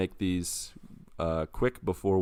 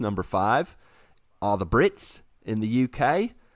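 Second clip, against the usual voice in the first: doing an Australian accent. Podcast host listing top listening countries, Australian accent. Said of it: "I was doing my Australian accent again".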